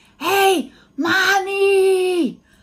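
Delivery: very loud, high shouted whisper, one word drawn out. Imitating the children whispering while their baby brother sleeps: imitating a loud shouting whisper. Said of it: "I like to call this shouting whispers".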